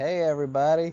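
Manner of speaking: very high-pitched Southern voice. Retelling arriving at school in California as a kid: imitating own childhood Southern accent. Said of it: "Who is this kid with the Southern accent?".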